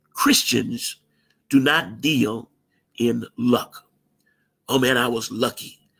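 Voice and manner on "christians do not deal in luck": slow, deliberate, halting, word-by-word emphasis. Repeating a point to listeners so they get it, slow. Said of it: "Let me say this again slow".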